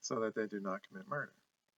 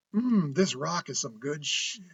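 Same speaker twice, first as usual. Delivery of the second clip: sarcastic criminal voice, loud and slow; 4 semitones higher, 5 dB louder than usual. Reading an expert's sarcastic portrayal of a would-be murderer: sarcastic mock murderer voice. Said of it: "imagine this is the person being sarcastic".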